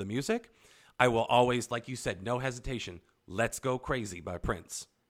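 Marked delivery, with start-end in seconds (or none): none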